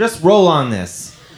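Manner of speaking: loud, high shouting. Recounting a fight, the speaker acts out shouting for the camera to roll: retelling a yell. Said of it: "I just yelled".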